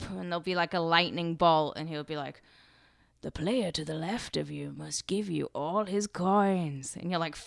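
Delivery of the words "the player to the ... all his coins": put-on creepy old man voice. Describing a video board game's host: Gatekeeper voice.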